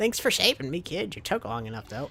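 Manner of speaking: put-on poorly attempted high old lady voice. Giving a character in the story an old lady voice. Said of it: "I'll give her an old lady voice".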